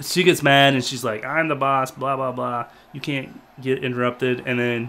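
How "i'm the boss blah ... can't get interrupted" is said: ordinary talk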